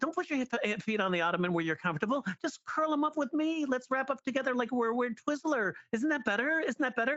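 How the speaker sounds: very high, shrill, insistent, nonstop nagging. Retelling how he kept going, acting out a girlfriend who won't shut up. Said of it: "an act out of a, of a girlfriend who won't shut up".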